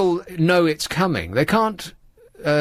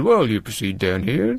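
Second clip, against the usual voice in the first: mechanical, robot-like delivery; 7 semitones lower than usual. Retelling what a policeman answered about crossing the road: imitating a policeman talking like a robot. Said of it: "like a robot".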